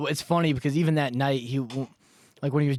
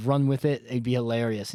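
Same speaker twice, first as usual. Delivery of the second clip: ordinary delivery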